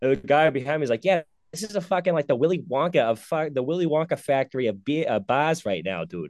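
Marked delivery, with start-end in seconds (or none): 1.0-6.3 normal, offhand, casual speaking voice. Retelling what a guy behind him at a bar said: imitating a guy behind him. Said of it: "That's literally how he sounded".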